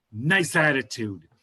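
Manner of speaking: put-on New York accent. Retelling Rosie O'Donnell walking away: Rosie O'Donnell New York accent. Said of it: "her accent was so New York".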